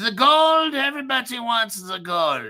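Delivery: high attempted German accent. Presenting today's crypto token as Zoltar, the speaker tries a German accent. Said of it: "Is that the German accent?".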